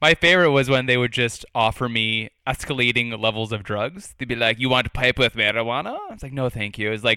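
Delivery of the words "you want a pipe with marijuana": put-on Italian accent. Retelling what people in Colombia would walk up and say: offensive put-on accent. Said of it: "That's such an offensive accent you're using".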